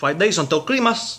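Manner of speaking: heavy, thick put-on Cuban accent, laid on. Retelling what a traffic school instructor told the class: imitating thick Cuban accent. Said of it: "tall guy with a thick Cuban accent".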